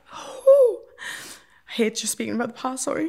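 near tears. Talking about a hard childhood, about to cry. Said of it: "I don't even know why I'm about to cry".

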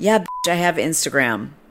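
ordinary delivery

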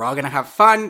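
very loud, crazed yelling. Retelling a Dance Moms meme of a lady at children: imitating Dance Moms yelling. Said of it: "yelling at these children".

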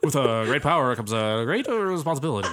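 stalls partway through the phrase, then carries on. Imagining an actor as Uncle Ben: Jeff Goldblum impression. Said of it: "the Jeff Goldblum accent that you did".

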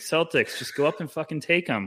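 mock worked-up, excited screaming outburst. Retelling being shocked, imitating own past screaming at the Celtics. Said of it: "I was screaming".

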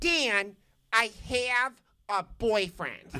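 put-on heavy Ohio accent, pitched very high. Dan retells how a woman from his discussion group answered his dinner invitation, in a thick Ohio accent. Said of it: "in a thick Ohio accent".

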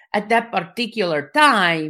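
put-on Spanish-sounding accent. Saying it the way their dad would, speak with a Spanish-sounding accent. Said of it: "now I sound Spanish".

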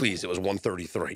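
ordinary talk

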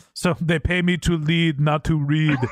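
put-on heavy Austrian accent, laid on thick. Retelling an executive's reply when offered three reports, in a thick Austrian accent. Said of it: "In a thick Austrian accent".

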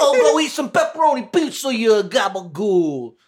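put-on Italian mafia accent. Co-host taunting an offended someone in Italy, put-on Italian mafia accent. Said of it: "Italian mafia scientists".

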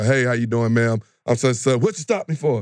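mock snappy, sharp delivery. Acting out a driver who snaps at an officer walking up: imitating someone snapping. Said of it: "some people really will snap up as soon as you walk up to the car".

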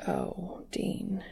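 gentle, soft, breathy, near-whispered murmur. He says the other man's name, lifting a hand to his cheek: softly. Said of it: "Castiel says softly".

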